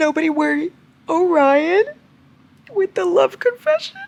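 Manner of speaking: very high, tearful, gushing with happiness. Speaker reassures the guys listening that nobody should worry, crying happy tears. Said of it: "I'm crying happy tears".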